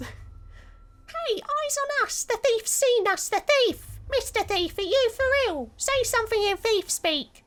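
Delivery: very high put-on kid voice, sudden pitch jump. Voicing a kid character in a game: Timmy voice. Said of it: "my Timmy voice".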